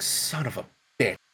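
quiet, whispered, muttered under-the-breath grumble. Retelling hearing about a stuck truck: imitating a mutter. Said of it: "I guess I kinda muttered something".

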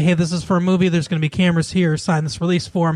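plain

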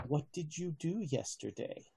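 very quiet, hushed, close voice. As game master, voicing the bursar speaking into a player's ear: quiet voice in the ear. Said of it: "he says quietly in your ear".

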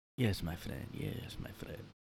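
put-on soft Spanish-accented speech. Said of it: "he'll just always say that".

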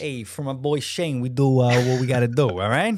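convincingly done put-on New York accent. Thanking someone for their time, done in a New York accent. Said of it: "That was that was a very good accent".

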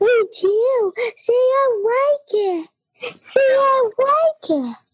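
very high, slow pet-talk voice. Showing how they talk to her, in a high-pitched voice. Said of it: "We like saying it in a high voice".

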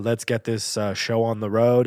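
ordinary talk

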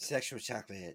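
creepy, skin-crawling, gross-sounding delivery. Jumping in during a podcast chat: Bee Man impression. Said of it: "that was your impersonation of the Bee Man".

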